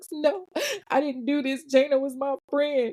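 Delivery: play-acted crying, high and slow. Retelling a suspect's denial to police: imitating someone crying. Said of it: "Cue the waterworks".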